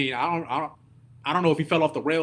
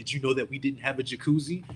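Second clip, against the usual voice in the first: sarcastic, mocking echoing tone; 2 semitones lower, 4 dB quieter than usual. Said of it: "He says it sarcastically".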